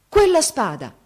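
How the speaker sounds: sudden, high, loud exclamation. Narrator voicing the king as he sees the young man's sword, exclaiming. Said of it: "esclamò".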